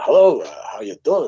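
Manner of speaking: put-on New York Yiddish character voice. Describing a comedy bit, voicing a two-thousand-year-old man greeting his interviewer, new york yiddish accent. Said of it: "sort of New York Yiddish accent kind of character".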